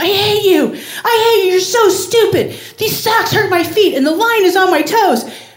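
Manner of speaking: put-on raging child's screaming fit, shrill and loud. Retelling what he screamed after putting on the socks, retelling his screaming. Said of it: "he started screaming".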